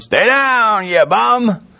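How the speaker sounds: high, mild mock jeering yell. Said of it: "some of 'em are yelling".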